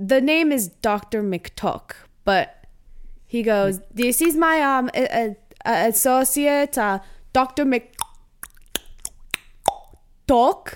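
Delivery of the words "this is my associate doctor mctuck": bad Swedish accent, higher, slower. Retelling a swedish man introducing his associate to a woman, in a bad swedish accent. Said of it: "the bad Swedish accent".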